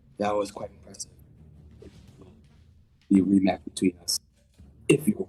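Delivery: whispering in character. Voicing a character who leans close to another's ear, whispering in character. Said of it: "whisper where no one else can hear me".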